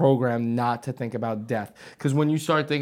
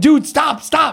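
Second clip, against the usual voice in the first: very high, shrill, very loud scream; 14 semitones higher, 10 dB louder than usual. Retelling screaming at a guy who lost control, retelling a scream. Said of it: "So I'm screaming".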